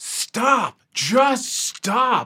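exasperated, fed-up, high, frustrated yell. Retelling how another speaker reacted to a ringing sound: imitating Danae's frustrated shouting. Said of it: "getting more and more frustrated".

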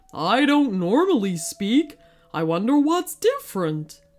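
puzzled, wondering talking horse voice. Narrator reads the horse's reply to Elizabeth, in a talking horse voice. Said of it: "The horse lifted its large head and looked at her. "Me?" replied the horse. "Oh, somebody left my gate open, so I decided to explore. But now I've got something stuck in my shoe and it hurts to walk."".

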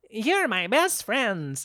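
dopey deer voice, high and swooping. Voicing a deer spoken to with Speak with Animals: dumb-sounding deer voice. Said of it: "this deer's starting to sound really fucking dumb".

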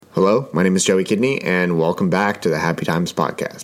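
extra deep, low-pitched intro voice. Opening a podcast episode with a greeting: deep voice. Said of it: "my voice sounded deep as heck".

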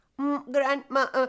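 stammering. A little boy answers his grandmother after she says she was worried, stammering. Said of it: "stammered the boy".

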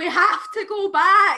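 very loud, high, panicked yell. Speaker retells a man shouting as they turned away in the car, imitating someone shouting. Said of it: "he started shouting".

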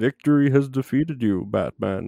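menacing masked villain voice. Speaker replying in conversation with a villain's movie line, Bane voice. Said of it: "That's my Bane".

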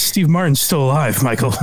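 ordinary delivery

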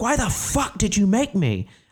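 very high, wild, swooping furious shriek. Retelling a night alone in the car after a failed show: retelling screaming at god. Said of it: "screaming at God".

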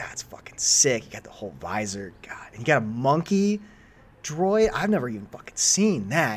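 totally starstruck gushing with swooping, rising pitch. Voicing a character gushing over a player's armor: NPC fanboying excitedly. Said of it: "totally fanboying over the Mandalorian gear".

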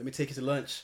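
suave, slick, smooth, easy delivery. Retelling a character asking someone out: imitating a smooth line. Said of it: "he's smooth for a second".

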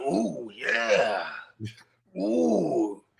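very low, deep ooh yeah. Imitating a man in a shampoo commercial: Macho Man voice. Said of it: "I don't know why he sounded like Macho Man there".

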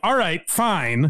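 half-hearted, grudging, reluctant okay. Retelling his reply when someone yells for Mudbone, mock-reluctant reply. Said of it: "almost reluctantly".

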